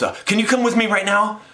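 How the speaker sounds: high, rushed, urgent, flustered, panicky delivery. Retelling how a stranger approached at a festival: imitating a panicked man. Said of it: "kind of like in a panic".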